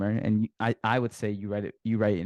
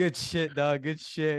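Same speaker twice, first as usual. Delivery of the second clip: imitated drunken speech, higher; 6 semitones higher than usual. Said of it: "drunk as fuck".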